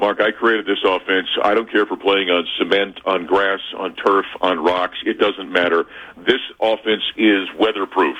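ordinary delivery

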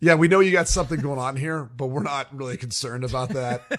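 ordinary talk

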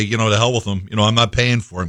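ordinary talk, nothing marked

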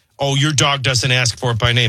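plain

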